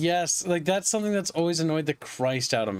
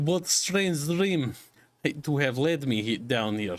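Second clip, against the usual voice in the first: improvised, put-on Romanian accent; 3 semitones lower than usual. A speaker improvises a character's lines, unsure which accent: improvised Romanian accent. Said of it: "it's Romanian".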